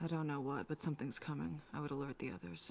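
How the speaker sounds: quiet, hushed half-whisper. Speaking in character to a companion during the game: half-whispering. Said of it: "I whisper to Harold".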